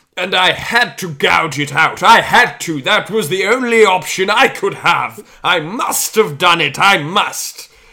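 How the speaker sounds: very loud, drawn-out, slow, sinister evil villain voice. Telling listeners how a character's dialogue was spoken, impersonating the character's voice. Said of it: "this is my best impersonation of this character's voice".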